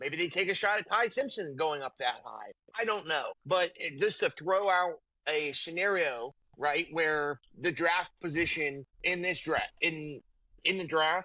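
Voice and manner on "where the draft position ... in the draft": halting, stumbling, stuttering, tripping over words. Speaker laying out a draft scenario, stuttering all over the place. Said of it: "I am just stuttering all over the place".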